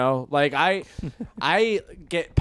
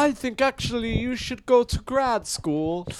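very high-pitched put-on British accent; 9 semitones higher than usual. Acting out what the other guy says, put-on British accent. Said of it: "The other guy is like with a British accent".

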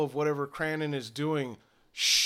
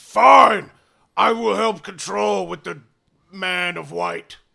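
loud, rough, booming brute orc voice; 4 semitones higher, 12 dB louder than usual. Voicing an orc who agrees to help: orc voice. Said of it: "The orc's eyes get big, and he says".

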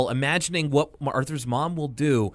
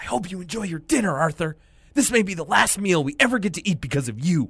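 put-on angry whisper, higher pitch; 6 semitones higher than usual. Retelling a cartoon sister's line at dinner: imitating an angry whisper. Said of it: "she's angrily whispering".

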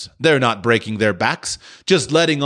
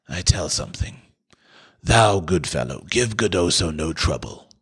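hushed whisper; 4 semitones lower, 4 dB quieter than usual. Narrator reads a man answering a young captive, whispering back. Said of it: "He whispered back".

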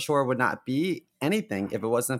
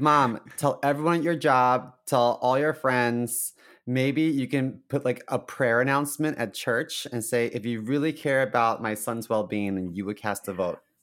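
ordinary talk

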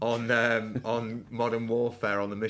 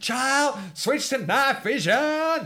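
put-on shouting voice, higher pitch and louder; 7 dB louder than usual. Retelling a film scene where Big Daddy, tied up, shouts: imitating Big Daddy shouting. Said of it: "shouting this out as Big Daddy".

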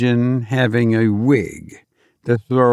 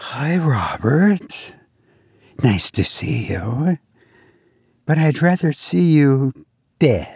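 slow, put-on girl voice; 3 semitones higher than usual. Speaker announces he will try out a voice and see what happens: girl voice. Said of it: "I'm going to try this girl voice here".

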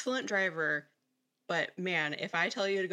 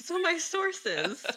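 very high-pitched talk breaking into giggles; 10 semitones higher than usual. Trying to start the serious part with another speaker: giggling while talking. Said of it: "The giggles".

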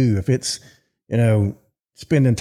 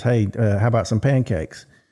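ordinary talk, nothing marked

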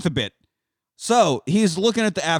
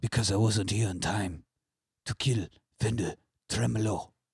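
put-on very low, deep, hushed voice with Spanish accent; 7 semitones lower, 9 dB quieter than usual. Voicing a hero arriving too late at a burning village: like a Zorro voice. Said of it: "It's almost like you're doing like a Zorro voice".

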